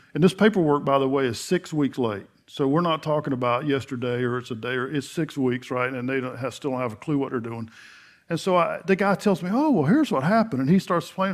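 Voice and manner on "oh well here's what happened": put-on, high, happiest, sunniest cheerful tone. Retelling what a man on the phone told him: imitating a happy, cheerful tone. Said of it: "in the happiest tone".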